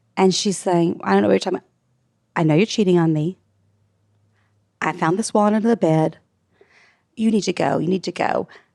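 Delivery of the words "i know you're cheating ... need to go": hard, unyielding, stern, severe tone. Retelling a man confronting a law student; mimicking a stern voice. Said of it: "in a very stern voice".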